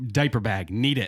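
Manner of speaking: acted, played-up distraught voice. Retelling texting for a diaper bag during a funeral, acting out being distraught. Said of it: "because I'm like distraught".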